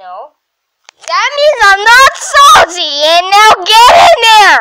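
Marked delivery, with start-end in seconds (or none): 1.1-4.6 loud shouting, yelled forcefully. Ordering the others into the tower: yelling. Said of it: "don't have to yell".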